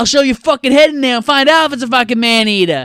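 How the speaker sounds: put-on very high, loud male Boston accent. Describing a favorite scene, quoting a guy who suddenly changes: talking like a Boston guy. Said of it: "he starts talking like he's a fucking Boston guy".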